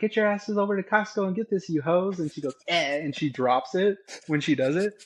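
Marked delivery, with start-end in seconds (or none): 0.0-2.2 high-pitched, bursting, hyper-energetic delivery. Speaker imitates a woman who calls everybody hoes while grabbing products: imitating a hyper-energetic woman. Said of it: "she's very like higher high energetic".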